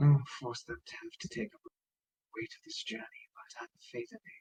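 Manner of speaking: faint, breathy, barely audible whisper. The game master voices Tyranny nodding during a conversation, whispering Tyranny voice. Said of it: "You're whispering".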